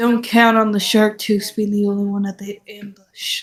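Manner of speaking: quick, rushed, secretive half-whisper. Tabletop player, as his character returning to the party: half-whispering.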